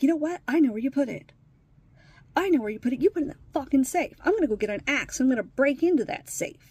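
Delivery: loud, upset rant. Speaker retelling what an upset man said, imitating someone upset. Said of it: "he's upset".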